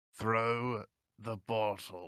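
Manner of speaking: soft mutter through gritted teeth, lips barely moving. A player speaks as their character, not moving, muttered through gritted teeth. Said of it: "trying to kind of through gritted teeth".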